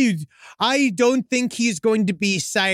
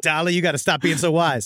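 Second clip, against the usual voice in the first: ordinary talk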